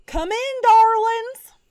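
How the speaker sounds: put-on old lady voice, pitched very high. Describing a voice heard from inside a door: put-on old lady voice. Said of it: "it sounds kind of like an old lady voice, which I'm not great at doing".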